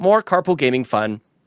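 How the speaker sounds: usual speaking voice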